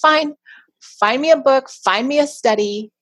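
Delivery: put-on slow, snarky, sarcastic tone. Retelling a reply to her husband's suggestion: imitating a snarky wife tone. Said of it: "in kind of that snarky wife tone of voice".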